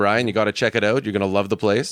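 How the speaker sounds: plain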